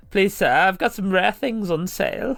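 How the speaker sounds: posh street-urchin voice. Joking about a game merchant as a street urchin: posh street urchin voice. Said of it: "a very posh street urchin".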